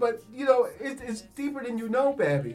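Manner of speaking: voice right on the edge of tears, holding them back. Talking with the other speaker in his studio, holding back tears. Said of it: "I'm doing my best not to cry".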